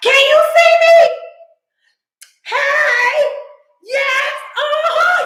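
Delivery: imitated loud whisper. Imitating the speaker's mom whispering on FaceTime: loud whisper. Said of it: "my mom will be talking like this, even though she don't whisper good at all".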